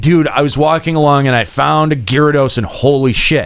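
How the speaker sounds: ordinary talk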